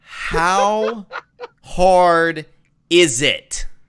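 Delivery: loud, condescending voice with laughter. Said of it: "So condescending".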